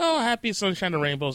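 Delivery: ordinary delivery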